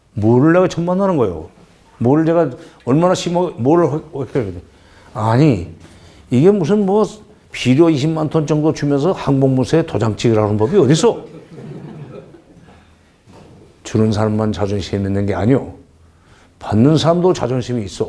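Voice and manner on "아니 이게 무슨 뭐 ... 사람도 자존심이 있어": choked-up, aggrieved voice catching in the throat. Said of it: "막 목이 메여가지고 그러는데".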